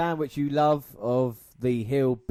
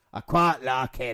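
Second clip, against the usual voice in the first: poor put-on Scottish accent. Trying to do a Scottish accent that a friend calls shit; bad Scottish accent. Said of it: "your Scottish accent is shit".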